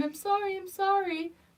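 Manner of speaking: play-acted tearful pleading. Retelling how a girl curled up in a ball apologized: imitating someone crying. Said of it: "in tears, crying, like, curled up in a little ball, just going".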